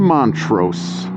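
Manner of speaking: Montrose said with heavy stress on first syllable.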